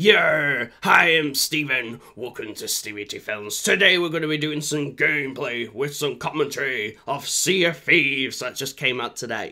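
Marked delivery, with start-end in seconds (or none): 0.0-8.4 put-on pirate accent, drawn-out "yer". Opening a Sea of Thieves gameplay video, in a put-on pirate accent. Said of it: "I'll stop with the accent".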